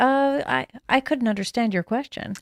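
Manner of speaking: robotic automated phone voice. Describing calling an automated phone system: imitating an automated phone system. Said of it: "like a automated phone system".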